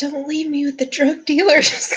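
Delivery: put-on whispering girl's voice. Narrating a scene, voicing a girl who leans into the listener's ear, whispering. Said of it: "She gets in her ear and she's like".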